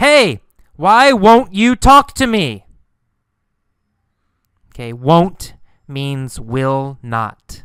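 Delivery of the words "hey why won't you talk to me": high, loud yelling. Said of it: "He yells".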